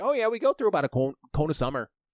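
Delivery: loud, high, fast northern Michigan accent, rattled off.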